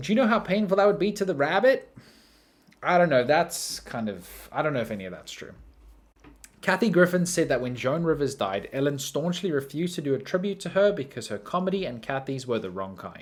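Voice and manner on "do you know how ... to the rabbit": high, shrieking, screaming outburst. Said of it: "she screamed at them".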